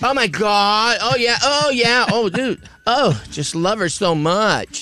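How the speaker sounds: high gushing voice. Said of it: "what do you think [name] fans sound like".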